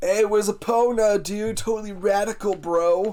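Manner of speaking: put-on surfer dude voice. Voicing the game character Fado after the surfer suggestion: Fado as a surfer dude. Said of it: "he looks like he speaks like a surfer dude".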